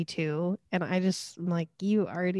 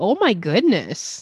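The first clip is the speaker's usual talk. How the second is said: very loud, put-on Midwestern accent; 9 dB louder than usual. Recounting a woman who wants to be back on television, quote her, imitating her Midwestern accent. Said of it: "this is where she has the Midwestern accent".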